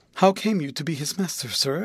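ordinary delivery

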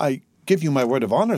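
ordinary delivery

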